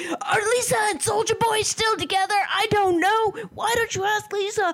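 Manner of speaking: acted-out, rowdy, very high-pitched, shrill yelling. Retelling how Jeffrey answered a question on a live: imitating Jeffrey yelling. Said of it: "yelling like this".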